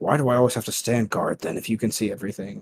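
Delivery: muttered line in a put-on voice. Narrating a scene, voicing Bora as he leaves, muttering under breath. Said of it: "Bora mutters under his breath".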